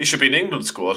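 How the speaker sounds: praise said with sarcasm. Discussing a team's player with the other speakers, sarcastic. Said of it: "He says sarcastically".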